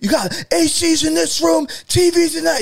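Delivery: shrill, high, drawn-out screaming. Retelling how the dad yelled at everyone after the power cut: imitating dad screaming. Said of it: "he started screaming at everyone".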